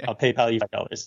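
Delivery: normal talking voice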